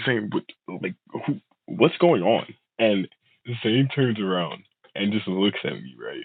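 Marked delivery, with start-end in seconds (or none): 0.0-2.5 put-on drunken stammer, higher pitch. Retelling following a friend out of a party: imitating own drunk stuttering. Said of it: "I'm drunk, so I'm kinda stuttering".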